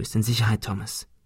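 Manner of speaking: in a whisper. Speaking to someone just caught from a fall, whispered. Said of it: "flüsterte Ben".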